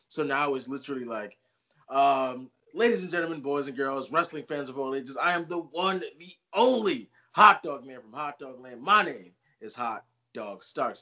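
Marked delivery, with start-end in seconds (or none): 2.7-11.0 grand, showman's wrestling ring-announcer voice. Showing the intro said before giving a wrestling promo: wrestling promo intro delivery. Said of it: "And that's my intro now".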